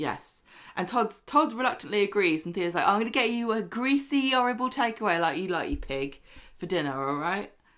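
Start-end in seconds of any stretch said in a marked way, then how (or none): 2.9-7.5 mock falsely bright, nice-sounding cheerful tone. Retelling a line from the show in an imitated faux cheerful tone. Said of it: "In a faux cheerful way".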